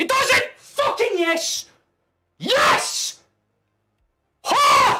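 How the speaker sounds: drawn-out, very loud, high roar of joy. Watching a football match as Jota scores, excited shouting. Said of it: "I know I'm shouting".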